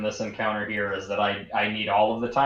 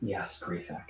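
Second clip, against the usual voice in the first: low, hushed, near-whispered murmur; 3 semitones lower, 11 dB quieter than usual. Narrating the scene, the speaker voices her reply to the prefect in a low voice. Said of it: "She'll just say in a low voice".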